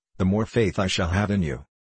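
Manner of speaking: plain reading voice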